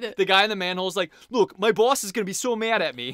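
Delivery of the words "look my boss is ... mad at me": imitated New York accent. Speaker quotes the guy in the manhole in a new york accent. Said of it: "everybody in this version of Los Angeles had a New York accent".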